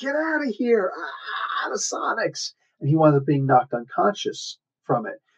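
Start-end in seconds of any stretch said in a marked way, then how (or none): 0.0-2.5 high-pitched pained yell. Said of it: "Cap is yelling".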